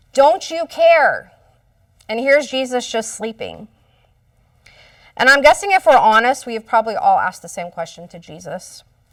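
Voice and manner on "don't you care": mock, high, raised yell, fully hollered. Retelling the disciples yelling at a sleeping Jesus in the storm: imitating someone yelling. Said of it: "They're yelling".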